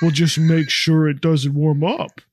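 put-on puppet voice. Retelling a scene where Carol talks through a puppet: put-on puppet voice. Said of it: "tells Peter in a puppet voice".

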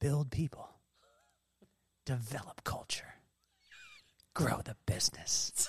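very quiet, hushed, breathy whisper. Recounting giving an answer to a listener, the speaker repeats it as whispered then. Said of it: "and I kind of whispered".

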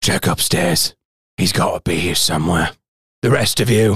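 low, snarling, commanding tone. Game master voicing a character in the scene, snarling. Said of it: "As he kind of snarls".

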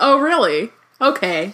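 sassy clapback voice. Reading along and voicing Harry: sassy Harry voice. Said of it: "you add some sass into that".

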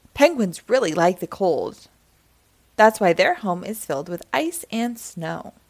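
ordinary talk

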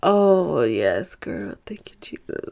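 very drawn-out, slow, low, tired sigh of relief. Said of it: "you know when you're tired and you rub your eyes and you're just like".

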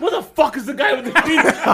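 angry, very high, pissed-off griping outburst. Retelling how a friend's father reacted at the game: imitating an angry father. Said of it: "the way he got pissed off".

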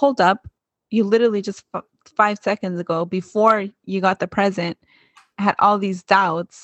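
plain

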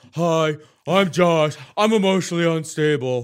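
very loud, high, derisive, mocking put-on drawl. Retelling how Paulie mocked Josh: imitating Paulie imitating Josh. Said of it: "he's just like".

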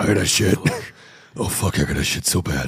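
very low, deep, put-on brooding hero voice. Joking about Batman needing to shit on a rooftop: Batman deep voice. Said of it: "still doing the deep voice to himself".

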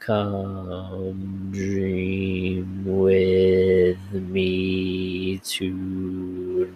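very slow, deep demonic voice, me stretched out. Reading a creepy Reddit story aloud, voicing the doll Teddy, slow, deep, demonic. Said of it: "that slow, deep, demonic voice said".

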